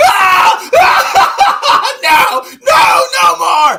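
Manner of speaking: very high, very slow, drawn-out fake pain screams. Retelling faking screams while a parent smacks pillows: retelling fake screaming. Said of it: "so I'm screaming, faking as a kid".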